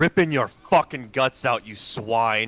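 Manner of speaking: loud, menacing, threatening yell. In a tabletop game, a character yells back at two startled figures: yelling a threat. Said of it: "I will yell back at them".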